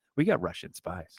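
play-acted soft, dry, matter-of-fact deadpan. Telling how a woman answered during a walk around the neighborhood, retelling a deadpan line. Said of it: "she looks over at me like deadpan".

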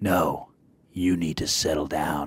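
dark superhero voice, deep, slow and menacing. Retelling a reply to a man at a game: Batman voice. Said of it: "Batman voiced him".

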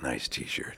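hushed, secretive, breathy whisper, barely voiced. Retelling greeting a stranger in a fan shirt: retelling a whisper. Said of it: "And I whisper it to them".

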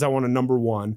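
normal talking voice

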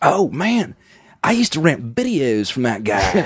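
put-on blended Carolina and Southern California accent. Retelling an uncle's excited line about a filmmaker: imitating uncle's South Carolina-Southern California mix accent. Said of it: "I can do one sentence I memorized that he did".

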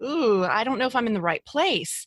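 ordinary talk, nothing marked

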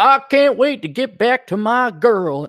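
put-on country Texan farm boy accent. Mocking a game's main hero by quoting him in a texas farm boy voice. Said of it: "he's a Texas farm boy".

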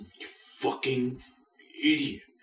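strained, breathy whisper, struggling to get words out. Retelling a show scene after a stroke: imitating Logan Roy struggling to speak. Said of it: "even though he's struggling to say it, he's just going".

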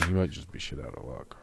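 quiet, low mumbling.

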